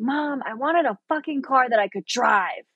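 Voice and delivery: mild, exasperated, fed-up frustrated outburst. Retelling a frustrated moment during driving lessons: retelling a scream at mom. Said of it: "I screamed at her, and I was like".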